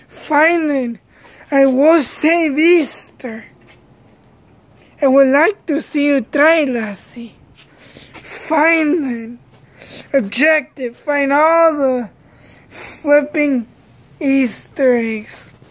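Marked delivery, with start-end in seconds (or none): 5.0-7.3 played-up, put-on leprechaun character voice. Playing the leprechaun in an Easter skit: leprechaun voice.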